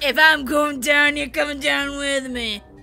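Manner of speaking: deep cartoon monster voice. Player to another player pushing them off the map, in a Monsters, Inc. monster voice. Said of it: "You sound like the fucking monster from Monsters, Inc".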